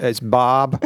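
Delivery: imitated American accent. Retelling how Americans say a name: imitating an American accent. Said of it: "So I was like".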